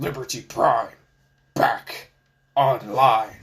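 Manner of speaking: deep, slow put-on voice. Redoing a line after being told it needs to be deeper: deeper put-on voice. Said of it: "it needs to be deeper".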